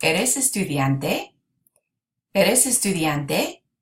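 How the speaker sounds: rising pitch on the end of estudiante. Spanish lesson showing how to turn a statement into a question, rising question intonation. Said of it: "raise your voice at the end".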